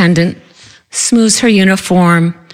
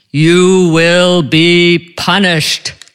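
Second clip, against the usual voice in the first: very slow, deep, godlike, divine voice. Retelling how a teasing husband summoned powers: deep godlike voice. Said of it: "in this deep, godlike voice".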